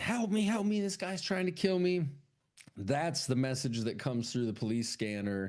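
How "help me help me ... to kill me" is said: yelling, pitched high. Retelling a movie scene where a woman yells for help: imitating someone yelling for help. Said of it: "She's yelling".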